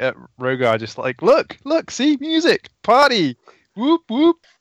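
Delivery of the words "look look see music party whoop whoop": high, overly dramatic, way over-the-top hype. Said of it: "overly dramatically".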